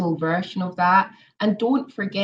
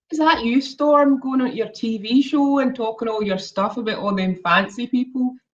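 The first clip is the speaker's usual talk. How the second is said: much stronger, broad Glaswegian accent, pitched up; 5 semitones higher, 3 dB louder than usual. Showing how people in Glasgow sound compared with Edinburgh, strong Glaswegian accent. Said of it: "the Glaswegian accent is like much stronger".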